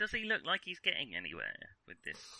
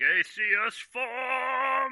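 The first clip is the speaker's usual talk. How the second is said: reverb-heavy, booming echoing shout, very loud, very high; 13 semitones higher, 10 dB louder than usual. Playing a game, a player stands up and calls out a spell: reverb-heavy shout. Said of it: "shout in a reverb-heavy voice".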